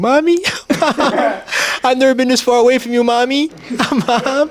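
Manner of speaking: very high little whimper, pleading whimpering tone. Telling a story, the speaker imitates Nick heard through the door, mock whimpering. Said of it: "I heard like fucking whimpering".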